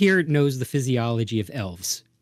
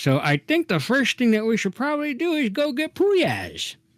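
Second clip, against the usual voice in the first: very high, talking through a mouthful of food; 11 semitones higher than usual. Voicing Gil suggesting a plan to the group, talking through a mouthful of food. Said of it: "through a mouthful of food".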